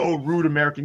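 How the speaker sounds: mock dismissive, scornful, sneering tone. Retelling the manager's reply after a rude remark: imitating the manager's retort. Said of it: "And then he did the".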